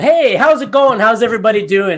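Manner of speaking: very loud, high-pitched, big and bold delivery. Greeting an audience to capture them: big and bold. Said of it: "you can come big and bold".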